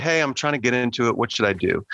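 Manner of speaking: normal talking voice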